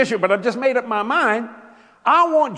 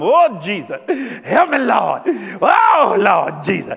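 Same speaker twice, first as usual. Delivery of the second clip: very slow, beseeching, pleading tone; 4 dB louder than usual. Showing how people sound when praying to ask God for something: imitating someone begging in prayer. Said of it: "you're usually asking God for something".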